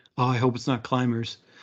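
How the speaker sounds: ordinary delivery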